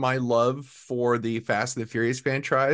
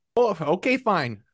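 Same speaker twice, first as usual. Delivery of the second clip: a bit of Minnesota accent; 5 semitones higher than usual. Introducing the next segment, speak with a slight Minnesota accent. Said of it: "Got a little bit of a Minnesota accent there".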